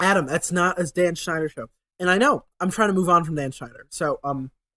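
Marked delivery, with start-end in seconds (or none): none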